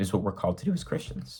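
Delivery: soft, breathy, near-whispered, voice cracking. Speaker addressing listeners, voice cracking. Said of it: "my voice cracked".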